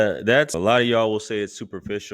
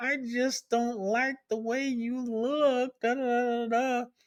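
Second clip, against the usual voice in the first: high, slow, drawn-out mocking man voice. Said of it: "And he was".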